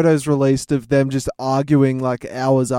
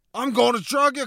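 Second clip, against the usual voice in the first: aggressive put-on voice, higher and quieter; 10 semitones higher, 4 dB quieter than usual. Retelling a story on request: Nicolas Cage voice. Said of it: "now the Nicolas Cage voice".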